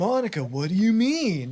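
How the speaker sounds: put-on slow visual novel protagonist voice. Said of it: "Aaron doing his protagonist voice".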